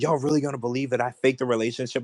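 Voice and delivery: ordinary talk, nothing marked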